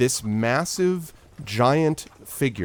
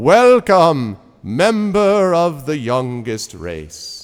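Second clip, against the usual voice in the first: booming, very slow, drawn-out voice; 4 semitones higher, 8 dB louder than usual. Voicing Selsig welcoming the adventurers: Selsig booming voice. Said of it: "can we hear that voice booming outside?".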